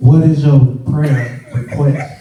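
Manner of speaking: put-on whisper. Retelling how a man at church whispered a question: imitating a whisper. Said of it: "he whispered".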